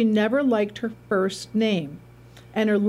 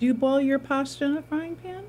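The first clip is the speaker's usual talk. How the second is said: playful teasing tone with higher pitch; 5 semitones higher than usual. Reacting to a pasta tip, teasing the other person about it. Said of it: "I'm teasing you now".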